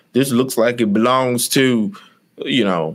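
put-on far-off West Virginia hillbilly country accent. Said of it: "I love your country voice".

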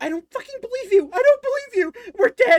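very high, very loud, shrill, frantic mouse shouting. Voicing a terrified mouse yelling at the players: panicked mouse shouting. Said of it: "you hear".

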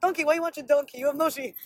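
put-on Russian accent throughout. Retelling what a new friend said back, in a Russian accent. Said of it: "And he has a Russian accent".

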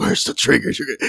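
put-on growling superhero voice.

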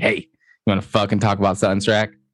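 ordinary talk, nothing marked

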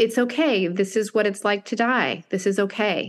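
put-on, acted comforting, reassuring voice. Retelling how a woman's words felt like a mom comforting a child, imitating a comforting voice. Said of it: "It was like I was being comforted".

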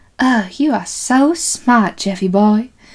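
slow, doting, fond, admiring praise. Retelling a movie scene where she praises his tic-tac-toe win: imitating the nurse's voice. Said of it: "that's actually very similar to how she sounds".

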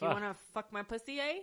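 put-on Canadian accent, leaning hard on eh. Imitating how canadian girls talk: put-on canadian accent. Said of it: "They say A a lot, too. They'd be like".

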